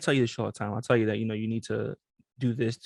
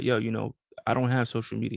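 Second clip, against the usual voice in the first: ordinary talk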